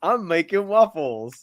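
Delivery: animated cartoon donkey character voice. Showing the usual impression of Donkey from Shrek: Donkey impression. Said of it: "People also always have their donkey impression".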